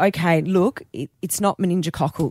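normal talking voice

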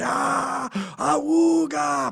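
high, loud, creaky battle cry.

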